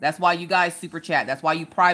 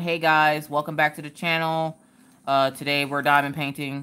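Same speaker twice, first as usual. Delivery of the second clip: flat, low-energy, dull monotone drone. Vlogger showing her channel intro when she's not happy: flat monotone delivery. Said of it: "You get very monotone".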